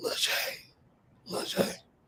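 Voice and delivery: faint, breathy, whispered, calling-out voice. Retelling how his father, just awake in hospital, called his name: imitating his dad calling out. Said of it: "My dad was like".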